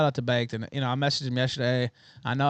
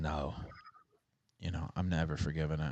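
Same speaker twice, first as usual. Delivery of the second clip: icy, very cold, unmoved tone; 9 semitones lower, 11 dB quieter than usual. Retelling a guest's reply on the show: imitating a cold reply. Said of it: "he just very coldly goes".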